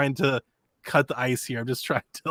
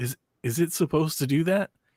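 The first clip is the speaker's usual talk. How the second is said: put-on fearful, stumbling, hesitant, nervous tone. Retelling a nervous young woman's question to him, imitating a trepidatious delivery. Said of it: "in like the most trepidatious like delivery".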